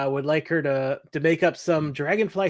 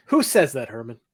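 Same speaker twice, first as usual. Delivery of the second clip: ordinary talk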